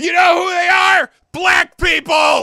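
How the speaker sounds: shrill, very loud, ranting shout. Mocking a man's words while asking why he is yelling, imitating someone yelling. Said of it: "Why are you yelling?".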